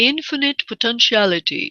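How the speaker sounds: put-on Indian accent. Quoting a meditation teacher's phrase: Deepak Chopra accent. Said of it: "I have to have that in, that accent".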